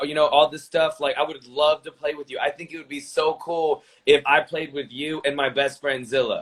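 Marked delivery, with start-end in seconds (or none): none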